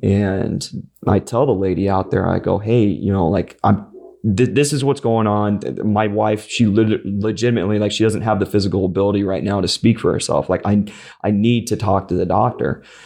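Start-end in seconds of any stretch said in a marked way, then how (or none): none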